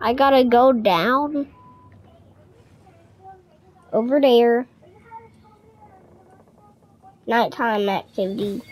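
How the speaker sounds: nervous, frightened, drawn-out, pitch going down. A streamer playing a game has to go down over there, scared. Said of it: "I'm so scared right now".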